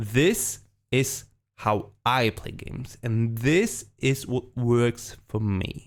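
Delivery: slow emphatic delivery. Speaker explains how he plays games, in a slow, emphatic delivery. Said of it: "Let me emphasize this sentence".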